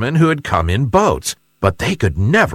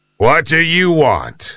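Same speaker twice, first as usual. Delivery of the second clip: ominous, hostile, menacing, threatening tone; 4 semitones higher than usual. Reading a story, the big bad fish answers a guppy at his cave door, menacing voice. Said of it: "Said the big bad fish in a menacing voice".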